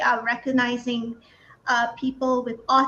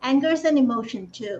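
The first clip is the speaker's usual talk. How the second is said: ordinary talk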